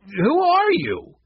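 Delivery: hoarse voice, pitched very high. Hank, backing away from a stranger who caught the thieves, speaks; hoarse demand. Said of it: "he demanded hoarsely".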